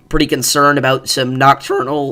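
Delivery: voice cracking mid-phrase. Talking through the severe weather outlook with the guys, voice cracking. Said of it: "that was a horrible voice crack".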